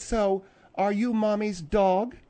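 normal talking voice

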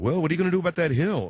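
put-on Midwestern Chicago-Minnesota accent. Speaker imitates his father-in-law visiting on Thanksgiving, Chicago-Minnesota accent. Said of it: "I'm doing sort of a Chicago, Minnesota accent".

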